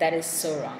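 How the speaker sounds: ordinary talk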